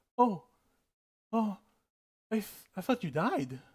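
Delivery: a little timid, hesitant, with a stammering start. Retelling a character answering a shocked woman, a little timid. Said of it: "actually he goes timid a little bit".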